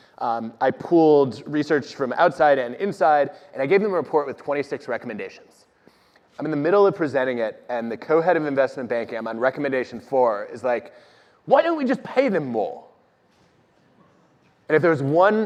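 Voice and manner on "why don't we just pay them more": high-pitched, put-on British accent. Retelling what the co-head of investment banking said mid-presentation: imitating a british accent. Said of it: "say that in a British accent".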